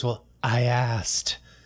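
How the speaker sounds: slow, sultry put-on voice.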